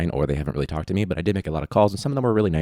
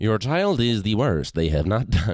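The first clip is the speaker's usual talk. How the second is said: robotic, mechanical teacher voice; 4 semitones higher than usual. A teacher imagines answering a parent in a different voice: robot voice. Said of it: "Cue the robot".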